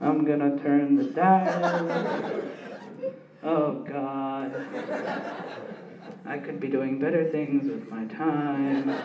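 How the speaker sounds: put-on very low, unenthusiastic, bored mutter. Speaker mocks a man sitting nearby who did not look excited: mock-bored grumble. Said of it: "He was sitting over here like".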